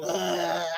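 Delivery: low, soft, gloomy groaning bleh.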